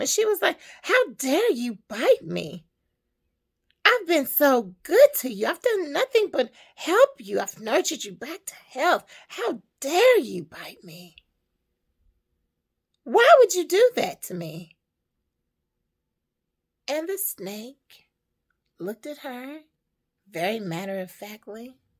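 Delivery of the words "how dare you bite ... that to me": loud, high, furious, angry scolding tone. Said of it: "she got really mad with him".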